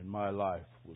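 soft, low, ashamed, remorseful voice. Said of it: "in shame and embarrassment and regret and remorse".

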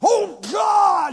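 very high, loud, petulant tantrum outburst. A speaker imitates a frustrated person crying out to God: mock temper-tantrum cry. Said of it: "a puny little man throwing a temper tantrum".

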